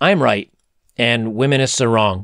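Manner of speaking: normal talking voice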